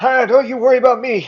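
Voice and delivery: put-on shrill, very high, loud, booming old-man voice. Voicing the old man answering a player's question: talkative old man voice. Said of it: "he's an old guy".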